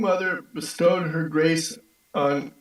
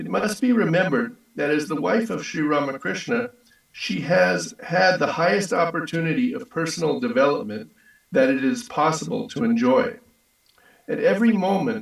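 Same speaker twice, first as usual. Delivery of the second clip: normal talking voice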